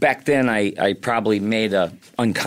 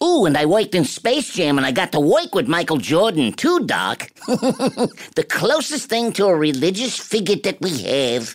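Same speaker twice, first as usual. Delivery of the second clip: high-pitched, swooping cartoon rabbit voice; 8 semitones higher than usual. Showing the cartoon rabbit voice finally settled on: Bugs Bunny voice. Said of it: "Oh, Bugs".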